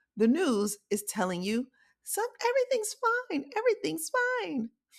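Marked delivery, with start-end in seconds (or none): 2.1-4.7 put-on very high little old lady voice. Speaker acts out the news talking to the listener, in a little old lady voice. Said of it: "I make the news sound like a little old lady".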